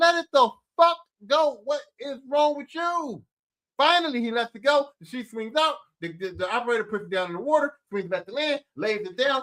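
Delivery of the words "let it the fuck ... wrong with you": put-on exasperated yelling. Recounting everyone yelling at a man holding onto a flying sheet, retelling an exasperated yell. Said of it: "And we're just like".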